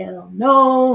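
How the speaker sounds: high-pitched screamed outburst. Retelling refusing to see an estranged relative: retelling a scream. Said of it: "I was screaming to the top of my lungs".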